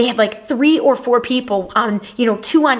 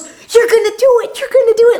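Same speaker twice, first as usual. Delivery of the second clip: put-on excited cheering, higher, faster; 11 semitones higher, 5 dB louder than usual. Speaker retelling a man cheering them on during a lap, imitating someone all excited. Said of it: "he's all excited".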